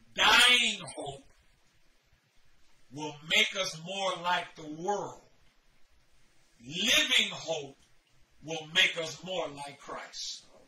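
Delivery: drawn out slowly, word by word, deliberate emphasis. Speaker addressing listeners, saying it slow so they can write it down. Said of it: "I'm going to say it slow".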